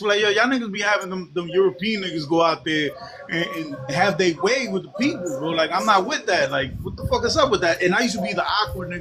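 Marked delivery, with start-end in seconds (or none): none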